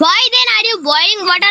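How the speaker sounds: ordinary talk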